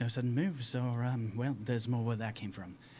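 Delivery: measured, restrained indoor voice without fuss. In a game, a player's character looks down and speaks: much quieter indoor voice. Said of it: "in a much quieter indoor voice".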